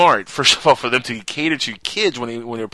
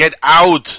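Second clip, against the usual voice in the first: put-on Austrian accent, higher and louder; 4 semitones higher, 9 dB louder than usual. Retelling words written on a wall: Arnold Schwarzenegger accent. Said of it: "did you actually have to do that with an Arnold Schwarzenegger accident?".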